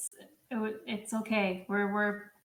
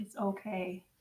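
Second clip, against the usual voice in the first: very deep, soft, calm voice; 2 semitones lower, 6 dB quieter than usual. Retelling what he says as he looks in her eyes, imitating a deep, calm voice. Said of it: "the voice is very deep and calm".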